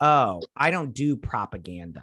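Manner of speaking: normal talking voice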